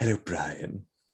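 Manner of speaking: put-on posh British cartoon baby voice. In a voice-guessing game, a player copies the line in Stewie Griffin's voice. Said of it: "try and copy it the best you can".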